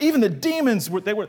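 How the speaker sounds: high, fast, crazy excited voice.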